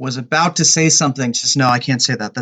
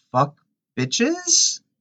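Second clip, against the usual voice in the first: exaggerated mocking caricature voice, very high and swooping; 11 semitones higher than usual. Retelling how one of the guys answered, in his most crackertastic voice possible. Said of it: "goes in his most crackertastic voice possible".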